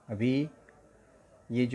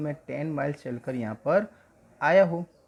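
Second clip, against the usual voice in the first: normal talking voice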